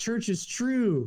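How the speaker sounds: slow, high-pitched, drawn-out voice full of awe.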